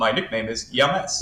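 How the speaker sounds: mechanical, computer-read robotic voice. Retelling what a game character says when clicked, in a robotic voice. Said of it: "in this robotic voice".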